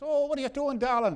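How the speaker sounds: slight Irish brogue, pitched very high. Retelling a woman greeting him at her door: light irish brogue. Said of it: "a little Irish brogue".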